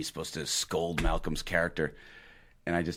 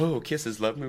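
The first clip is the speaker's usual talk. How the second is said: lovey-dovey sweet-talking voice, pitched up; 8 semitones higher than usual. Retelling an actor's on-set phone riff, imitating Malcolm sweet-talking his girlfriend. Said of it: "He's like".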